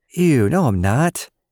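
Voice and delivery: very slow, drawn-out, high-pitched sassy tone. A girl retorts to her cousin's teasing in class; sassy comeback. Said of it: "she backsassed".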